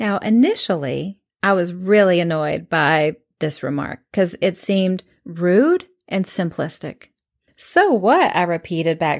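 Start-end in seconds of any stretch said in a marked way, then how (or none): 7.6-8.3 mock snippy, sassy teen retort, pitched up. Retelling a reply to a counselor: imitating her sassy teenage self. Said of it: "imagine my sassy teenage way".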